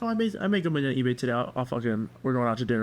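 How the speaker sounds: normal talking voice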